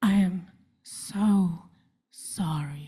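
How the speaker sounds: earnest, sincere, sorrowful and sad sympathetic tone. Quoting a friend who hugs them every time they meet, imitating a sincere, sad voice. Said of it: "says with the most sincere and sad voice".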